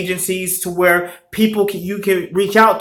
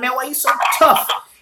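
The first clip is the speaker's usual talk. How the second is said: put-on casual New York accent, pitched up; 6 semitones higher than usual. Retelling what a passing man said to a kid: imitating a New York accent. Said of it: "he had a New York accent".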